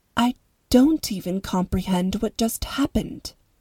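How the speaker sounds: plain reading voice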